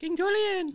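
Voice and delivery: very high, tiny little cartoon voice. Listing voices they can do, the speaker performs a Mort impression. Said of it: "my Mort impression".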